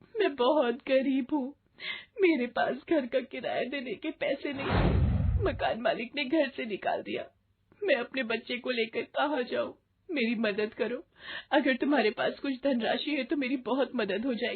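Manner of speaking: crying, pleading tone. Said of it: "आप रो क्यों रही हो?".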